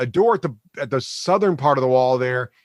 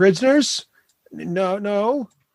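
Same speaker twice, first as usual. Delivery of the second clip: put-on childlike goblin voice, much higher; 7 semitones higher than usual. Voicing a goblin answering a player's question in a game, childlike goblin voice. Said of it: "This goblin sounds eerily like your children voice".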